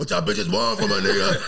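very high, very loud, rough, barking yell. Retelling how he answered his mom's request to clean his room: imitating himself barking at mom. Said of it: "You're barking at your mom".

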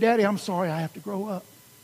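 imitated crying child, tearful words. Retelling what a child said last night: imitating a crying child. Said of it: "and she was crying".

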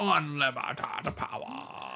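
hushed, soft, breathy whisper. During a game, after naming Palpatine as their pick, the speaker does a Palpatine impression. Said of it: "Did you not do that enough last time?".

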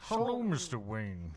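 loud, big, heavy-breathing film villain voice. Imitating how Bane sounded, like Vader played by Sean Connery: Bane voice. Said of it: "He sounded like if Vader was played by Sean Connery".

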